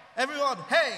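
loud rousing shout.

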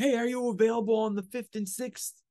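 mock holler, very high, loud and carrying. Retelling a man calling out to the speaker across the street, retelling a yell across the street. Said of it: "He's yelling this across the street".

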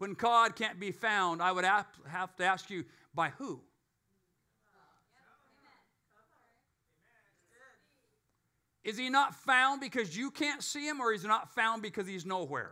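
lightly sarcastic tone. Preaching and asking a question, a little sarcastic. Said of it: "with a little bit of sarcasm".

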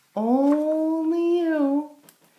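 high, slow, drawn-out wind voice. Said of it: "says the wind".

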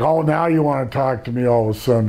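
plain

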